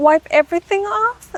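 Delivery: acted, very high, squeaky, stunned disbelief. Retelling a contestant's question about removing makeup: imitating someone shocked. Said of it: "in a way where she was so shocked".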